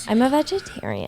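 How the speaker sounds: soft put-on Valley Girl accent. Repeating your own remark for the group, in a Valley Girl accent. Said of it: "That was my Valley Girl accent".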